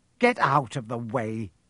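ordinary delivery

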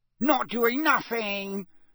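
high, cackling, mocking delivery. Reading a story aloud, the narrator voices Peeves in a cackling Peeves voice. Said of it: "cackled Peeves".

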